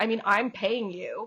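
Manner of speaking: imitated cutting, nasty tone. Retelling what a rude spectator said at the table: imitating a cutting, nasty remark. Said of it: "so cutting and so nasty".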